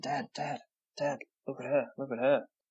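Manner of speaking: put-on whisper. Retelling how the nephew whispered to his dad in a cafe, retelling a whisper. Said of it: "he kind of was whispering".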